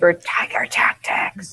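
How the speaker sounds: hushed, breathy, conspiratorial whisper. Speaking in character once the others are out of earshot: whispering in character. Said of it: "I whisper".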